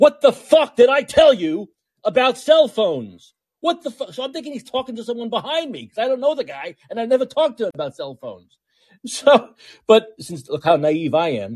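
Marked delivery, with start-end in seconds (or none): 0.0-4.1 mock angry, furious screamed tirade. Recounting a stranger coming at them, retelling a man screaming. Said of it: "this guy is screaming".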